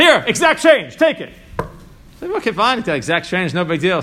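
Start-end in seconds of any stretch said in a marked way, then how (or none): 0.0-1.3 mock very high, loud shout. Retelling how a man cutting the line yelled to the cashier, retelling a yell. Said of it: "He yells out to the cashier".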